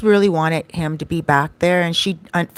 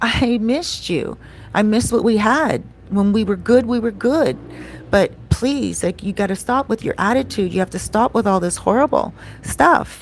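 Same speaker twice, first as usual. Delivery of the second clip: weepy, tearful, pleading voice through sobs; 4 semitones higher than usual. Retelling her plea for him to come back: imitating someone crying. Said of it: "she was crying".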